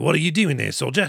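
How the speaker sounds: so-so, poorly done British governor-style voice. Recounting how the governor challenges a British soldier, do another bad Ray Stevenson impression. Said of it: "Again, not a good impression".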